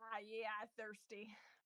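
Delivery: in-character orc voice. Voicing the orc as it goes up to a pool of water: orc voice. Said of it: "the orc goes up to it and is like".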